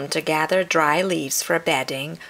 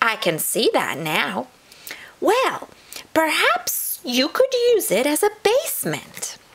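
very high, squeaky, little chipmunk voice; 10 semitones higher than usual. Narrator reads the chipmunk replying to Possum: squeaky chipmunk voice. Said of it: "A chipmunk hopped by. ... she squeaked".

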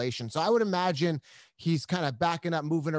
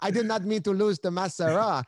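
put-on French Canadian accent; 4 semitones higher than usual. Talking about fights with a co-host, doing a GSP accent impression. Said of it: "I can't do the accent very well".

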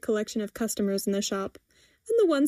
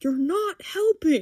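sharp hissing aside, pitched up; 6 semitones higher than usual. Narrating a character who swats a teen's head, hissing. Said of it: "and Eli swats her head and hisses".

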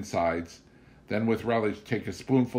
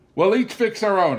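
beaming with pride, very high and very loud; 11 semitones higher, 9 dB louder than usual. Putting food on the dinner table, the narrator speaks to her companion, proudly. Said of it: "I said proudly".

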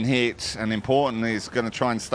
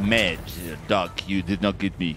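low, mock French accent. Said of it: "That's my French impression".

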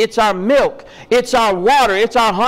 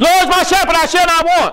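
panicked, frantic, much higher and faster; 7 semitones higher than usual. Speaker demonstrating a wrong way to read Psalm 23, panicked reading. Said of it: "Is it panicked when you read it to yourself?".

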